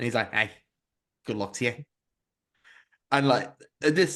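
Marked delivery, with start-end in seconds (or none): 0.3-1.8 imitated Liverpool Scouse accent. Retelling what a little Scouse man said to Steve: imitating a Scouse man. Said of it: "this little Scouse man".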